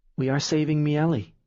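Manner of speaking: mumbled, muttered. Reading a story aloud, a character answers a question, muttering. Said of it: "he mutters".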